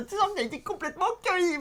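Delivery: ridiculous little voice. Introducing the show's film topic to a co-host, in a tiny ridiculous voice. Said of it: "cette petite voix complètement ridicule".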